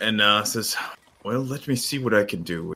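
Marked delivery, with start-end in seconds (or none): 1.2-2.7 said on a sigh, soft and sighing. Voicing a cleric asked to heal a bite: sighing as he speaks. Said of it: "he kinda sighs and".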